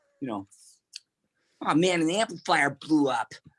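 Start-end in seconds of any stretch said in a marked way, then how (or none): 1.6-3.3 high, nasal, whiny complaining voice. Retelling complaints from years of playing rock music: imitating own whiny nasal complaining. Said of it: "I was whiny, nasally, and complainy".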